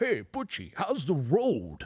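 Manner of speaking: slow delivery with wide, swooping pitch swings. Retelling a backstage chat with an old comedian: Rodney impression. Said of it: "that was a good impression".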